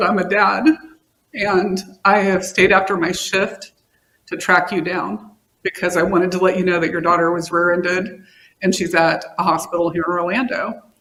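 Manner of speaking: emotional voice with rising, breaking-through feeling. Recounting an officer's call about a daughter's accident, getting emotional. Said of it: "I'm sorry, I'm gonna get emotional".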